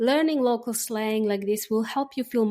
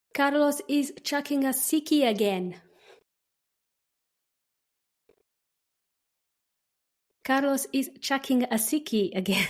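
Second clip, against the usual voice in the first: phrase spoken clearly and carefully, teaching voice; 4 semitones higher than usual. Saying a phrase for learners to repeat: speaking slowly for learners. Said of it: "I'll say each phrase slowly".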